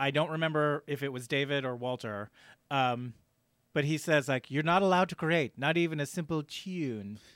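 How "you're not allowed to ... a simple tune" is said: exaggerated put-on British accent, higher. Quoting a weird movie line, imitating Fassbender's overdone British accent. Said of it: "like he was doing a British accent, but he, like, went overboard".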